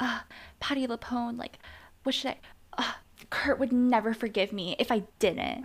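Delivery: scornful, mocking, sarcastic send-up voice. Retelling a show scene, mocking Rachel impression. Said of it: "Even Rachel's dialogue is so infuriating. She's like".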